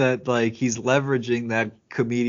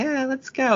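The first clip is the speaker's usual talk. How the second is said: very high, girlish put-on voice; 13 semitones higher than usual. Retelling a movie scene, speaker imitates boys dressed as girls, in a girly voice. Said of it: "they have like girly voices like".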